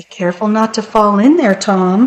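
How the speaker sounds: ordinary delivery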